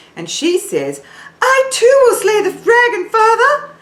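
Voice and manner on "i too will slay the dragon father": very high princess voice from the head. Showing singers where their high notes will come from, high head voice. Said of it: "she says it from right up here in her forehead".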